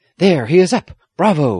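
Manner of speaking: high, loud, eager, thrilled excited exclamation. The squire tells Aggie, who has hidden her face, what he sees, exclaiming excitedly. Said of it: "the squire exclaimed, almost as excited as she was".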